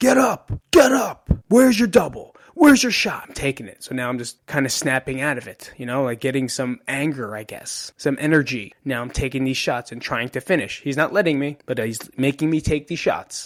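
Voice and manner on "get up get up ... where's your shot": mock, very high, shrill, loud yelling. Retelling a wrestling coach yelling at him to get up: imitating a coach yelling. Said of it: "he's yelling at me".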